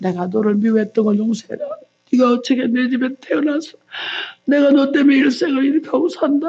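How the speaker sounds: imitated crying, tearful sobbing voice. Retelling a mother's words of repentance to her son, imitating someone crying. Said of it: "막 울면서 아들한테 회개했대".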